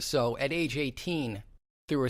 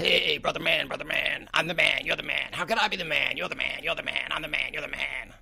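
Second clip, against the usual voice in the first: rough nineties radio shock jock patter; 3 semitones higher than usual. Recovering after a biopsy, showing off the voice: nineties shock jock voice. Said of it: "It's it's nineties shock jock voice".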